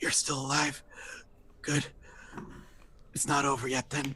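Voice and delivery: soft, weak voice of a wounded man. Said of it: "He's like".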